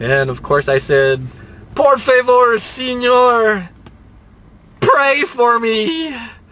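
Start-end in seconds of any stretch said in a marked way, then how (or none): 1.7-6.1 most pitiful, very high, slow begging. Retelling what he said to an old gentleman worried he was dying, put-on pitiful voice. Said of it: "in this most pitiful voice imaginable".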